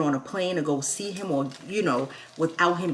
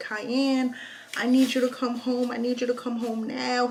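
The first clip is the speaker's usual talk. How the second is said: mock crying, tearful, high-pitched pleading; 7 semitones higher than usual. Retelling a mother calling her son home: imitating someone crying. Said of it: "She's crying".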